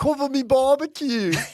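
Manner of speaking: very high-pitched, very loud Australian accent. Asked to do the australian accent one more time: australian accent. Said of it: "do your Australian accent for us one more time".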